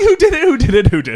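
high, demanding, repeated shouting. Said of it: "You're yelling".

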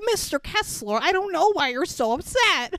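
strange high puppet voice. Retelling someone's line to Mr. Kessler, in a weird Frank Oz puppet voice. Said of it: "He does like a weird voice".

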